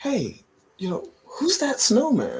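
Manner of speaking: put-on high, wide-ranging, puzzled, curious kid voice.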